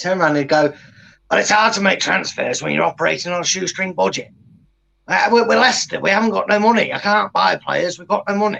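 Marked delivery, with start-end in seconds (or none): 1.3-8.6 gruff, rough, creaky put-on voice. Asked about Leicester transfers, doing an impression of how he'd answer. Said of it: "That's exactly how he'd say it. ... He told me I could do that impression of him".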